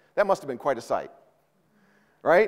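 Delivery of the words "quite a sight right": normal talking voice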